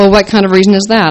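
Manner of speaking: ordinary delivery, nothing marked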